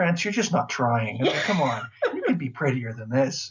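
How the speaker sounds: swooping, mock-exasperated, sarcastic tone. Describing the pretty villages to the others: mock-exasperated sarcasm. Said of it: "a little bit of sarcasm in your voice".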